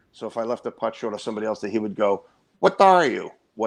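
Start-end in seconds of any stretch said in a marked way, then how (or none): 2.6-3.7 put-on Filipino accent, pitched up. Mimicking what a man would say when a putt was left short: filipino accent. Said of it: "in his Filipino accent".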